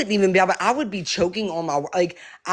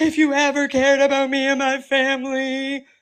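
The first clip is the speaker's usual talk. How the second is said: put-on crying, fake tears, high voice; 7 semitones higher than usual. Speaker mimics the person she confronts, who cried while talking: imitating fake crying. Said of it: "that's your fake ass cries".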